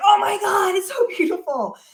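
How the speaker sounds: gushing, loud shout of awe. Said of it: "She's like".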